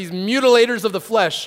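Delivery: ordinary delivery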